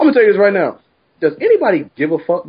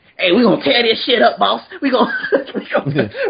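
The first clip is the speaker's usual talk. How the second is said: put-on tiny gremlin robot voice, much higher; 7 semitones higher than usual. Acting out what the boy being discussed said, little gremlin robot voice. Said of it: "He sounded like that little fucking gremlin robot".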